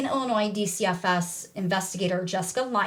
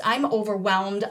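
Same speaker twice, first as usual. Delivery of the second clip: normal talking voice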